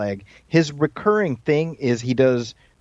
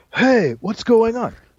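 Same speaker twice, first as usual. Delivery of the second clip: very high-pitched, laid-back surfer voice; 9 semitones higher than usual. Describing a movie starring Keanu Reeves, the speaker does a Keanu Reeves surfer voice. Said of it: "surfer voice".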